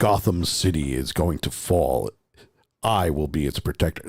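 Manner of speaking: very deep superhero voice, pitched way down. Describing a podcast reading, imitating Kevin Conroy's deep Kevin Conroy Batman voice. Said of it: "but as Batman".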